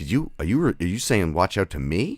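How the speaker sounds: put-on confrontational tone. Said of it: "I said it in a tone like".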